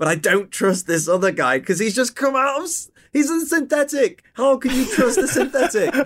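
nervous, worried tone.

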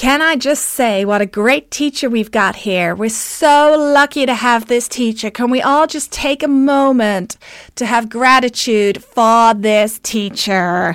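bad, slow put-on American accent. Quoting a woman who unmuted at each class start, poor American accent. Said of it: "I'm going to do an American accent that's really poor".

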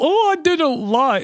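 very high voice, drawn out and slow. Acting out a comedy bit, answering Cody: Zeep Zorp voice. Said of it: "I'm doing Zeep Zorp's voice".

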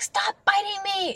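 mock, very high-pitched, loud yell. A mom recalls yelling at her three-month-old baby, retelling a yell. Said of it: "I had a couple of situations where I yelled".

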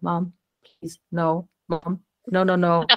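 mock mortified, slow, embarrassed pleading. Retelling how the kids react when the garden scene starts: imitating embarrassed kids pleading. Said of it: "They're so embarrassed".

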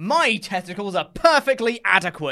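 loud, dead-serious, passionate, earnest total conviction. Repeating a wrestler's line with mock earnest conviction, imitating Baron Corbin. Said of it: "he says it with such conviction".

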